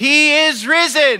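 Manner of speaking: loud, very high, building proclaiming voice. Congregation repeating a call and response, getting louder each time. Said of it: "it will get louder with each time".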